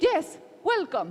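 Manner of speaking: very proud tone. Retelling a designer's answer to the managing director: imitating someone speaking proudly. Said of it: "she said very proudly".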